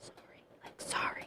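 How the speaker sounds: very quiet whispered under-the-breath mutter. Retelling own apology after a sharp pain: imitating muttering under breath. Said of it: "under my breath".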